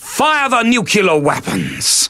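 overdramatic, over-the-top, alarming delivery. Recording the commander's order to fire the nuclear weapons, over the top. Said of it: "It's just a little bit over the top".

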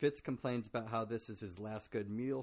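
ordinary delivery

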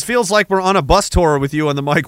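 ordinary talk

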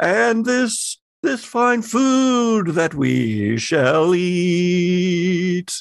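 pompous captain voice. Playing the captain of the ship in a role-play game, addressing his people: pompous ship captain voice. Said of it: "I'm glad you're all here tonight to see the wonders of my cuisine that we have on offer this fine evening. Oh, yes. Oh, yes, indeed. I, your captain, [name]".

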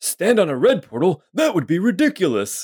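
ancient wizard intoning. A game master voicing a magician the players hear, in old ancient magician voice. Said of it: "You hear the voice of this old ancient magician guy say".

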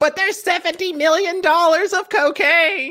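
very high, slow, loud, squealing impression. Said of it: "Anthony Stark's character's like".

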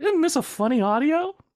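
put-on very high-pitched childish voice. Describing a commercial reused on TikTok, impression of TikTok kids. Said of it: "That's my impression of children on TikTok".

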